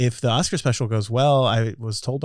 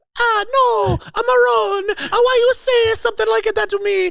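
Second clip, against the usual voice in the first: exaggerated put-on Italian accent; 5 dB louder than usual. In a comedy bit, a character asked whether he is Mario denies it, put-on Italian accent. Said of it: "Are you Mario?".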